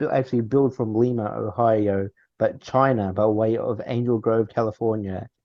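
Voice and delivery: ordinary talk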